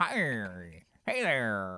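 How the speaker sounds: put-on swooping old-timey man voice, drawn-out "hello". Imitating a cat whose meow sounded like an old-timey guy voice. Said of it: "like an old-timey guy going".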